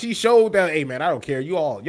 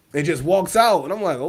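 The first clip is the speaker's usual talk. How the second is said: normal talking voice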